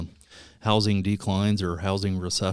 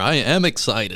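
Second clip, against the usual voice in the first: flat-sounding, dead level enthusiasm, a little louder; 2 semitones higher, 6 dB louder than usual. Repeating after being told that didn't sound excited: talking a little louder. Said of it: "let me talk a little bit louder".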